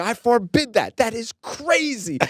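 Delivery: put-on very high, drawn-out, furious yelling. Speaker recounts a man questioning his personal money in the deal, retelling a man yelling. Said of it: "and he's yelling at me".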